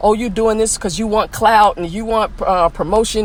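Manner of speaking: usual speaking voice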